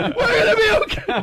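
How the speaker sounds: panicked, high-pitched yell, laughing and crying.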